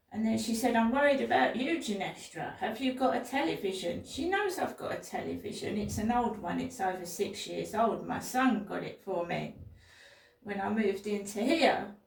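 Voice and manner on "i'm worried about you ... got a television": ordinary talk, nothing marked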